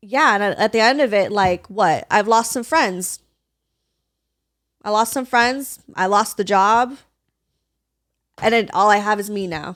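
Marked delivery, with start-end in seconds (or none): 2.2-9.8 choked-up voice, on the verge of tears. Speaker talking with the other speaker about a hard time, choked up, near tears. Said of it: "Damn, I'm about to cry".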